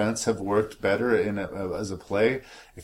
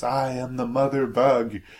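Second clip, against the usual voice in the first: mock full-on dramatic big-moment scream; 4 semitones higher, 3 dB louder than usual. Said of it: "stands up and screams".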